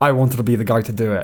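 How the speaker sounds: mock dead-earnest, heartfelt, sincere tone. Mocking the other speaker's earlier remark: imitating someone speaking sincerely. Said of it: "to sit there so sincerely and go".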